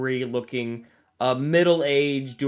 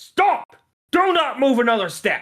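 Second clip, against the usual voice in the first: loud, shrill, very high-pitched shout; 12 semitones higher, 5 dB louder than usual. Game master voicing guards yelling at a player's character walking away; guards yelling. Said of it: "you hear the guards yelling at you".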